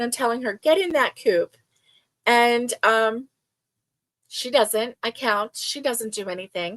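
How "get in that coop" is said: stern no-nonsense parental voice. Retelling ordering her into the coop, threatening her in a mama voice. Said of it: "I'm using my mama voice".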